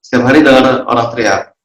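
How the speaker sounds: usual speaking voice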